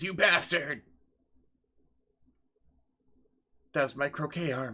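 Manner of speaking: groaning through pain. A man just cut in the shoulder answers his attacker, groaning in pain. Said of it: "The guy groans in pain".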